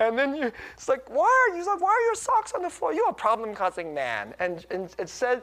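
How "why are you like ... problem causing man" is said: acted, very high, sing-song, sweetly teasing scold. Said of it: "she says it with this sweetness underneath".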